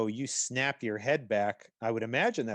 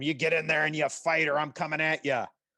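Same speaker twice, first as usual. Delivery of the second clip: furious, threatening, high-pitched angry battle screaming; 5 semitones higher, 3 dB louder than usual. Narrating a battle, the speaker voices Pertrib yelling at a fighter: Pertrib screaming angrily. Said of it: "He's screaming at him".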